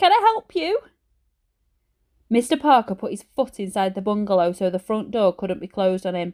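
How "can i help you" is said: squeaky, very high little voice. Reading a story where Ben answers a man at the door, in Ben's squeaky high voice. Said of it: "said Ben in a squeaky high voice".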